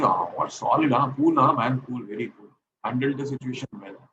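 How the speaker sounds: ordinary delivery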